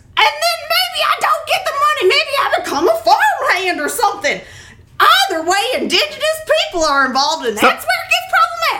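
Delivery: very high, hammy rootin' tootin' cowboy voice. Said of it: "stuck in your Rootin' Tootin' voice".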